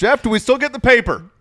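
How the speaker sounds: very loud, very high-pitched shouting. Imitating a coach as a dad at home: loud Brian Dutcher impression. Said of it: "It's all loud".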